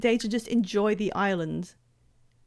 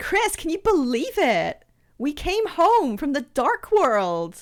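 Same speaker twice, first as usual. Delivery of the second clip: put-on higher, over-the-top Valley Girl voice. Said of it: "I did her like this".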